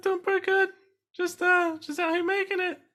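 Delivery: sudden high pitch. Asked on the podcast how he is doing, voice jumping way up high. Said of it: "it's a lie when your voice jumps two octaves".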